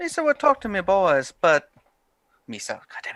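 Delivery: Barbados accent slipping, not quite on target. Voicing a character in a patois accent, slipping into Jar Jar Binks voice. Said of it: "Slipped into Jar Jar Binks there".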